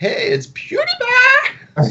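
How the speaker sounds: very high voice with big swooping pitch. Showing how PewDiePie says his own name: PewDiePie impression. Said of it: "he says it like this".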